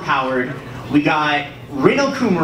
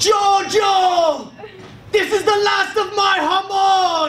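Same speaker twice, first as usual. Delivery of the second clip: very high, drawn-out scream in bad put-on Italian accent. Performing a line the character screams: screamed in terrible Italian accent. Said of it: "Here's my terrible Italian accent".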